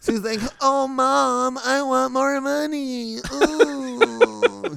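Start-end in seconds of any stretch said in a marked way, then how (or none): 0.6-3.2 very slow, creaky, whiny voice. Imitating the English dub voice actor as whiny: imitating a whiny English dub voice. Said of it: "the guy doing the English was like, "Man, this guy's whiny."".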